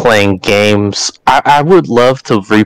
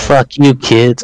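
ordinary talk, nothing marked

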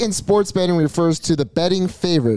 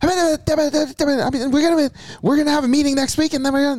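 very high, high-octane revved delivery, a little raspy; 10 semitones higher than usual. Showing how really rich CEOs talk: imitating Michael Rubin's high-octane voice. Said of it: "they have that very high octane".

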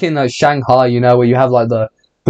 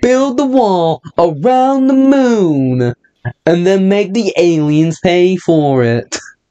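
put-on Texan drawl, pitched up, moon drawn out; 6 semitones higher than usual. Speaker does a bit for the group: Texan accent. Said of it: "Can you please stop with the Texan accent?".

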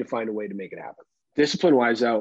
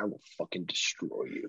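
very quiet whisper; 6 semitones lower, 13 dB quieter than usual. Describing the speaker's dad as a kid whispering in someone's ear: imitating a whisper. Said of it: "he just whispers in the ear".

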